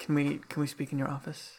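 hushed tones. Speaking in character to a lord, asking for a private talk: hushed tones. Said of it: "say in hushed tones".

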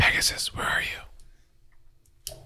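hushed, breathy whisper. A player in a dark passage calls to another character: whispering. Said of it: "I'm going to whisper".

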